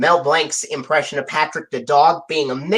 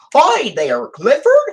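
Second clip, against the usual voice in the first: very high-pitched, goofy cartoon voice; 10 semitones higher, 3 dB louder than usual. Voicing a dog character mixing Barney Rubble and Goofy, goofy Patrick the dog voice. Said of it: "a mix of Barney Rubble's voice and Goofy's voice".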